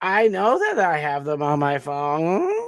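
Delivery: put-on rising intonation. Mocking people who uptalk: imitating uptalk. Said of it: "'cause it doesn't sound like you're confident".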